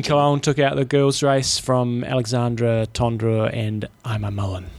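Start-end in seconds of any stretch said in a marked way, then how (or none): 4.0-4.7 quiet, slipped-in delivery, hoping to go unnoticed. Reading out a race's top finishers, saying the third name: said quietly. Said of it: "I said that third one quietly".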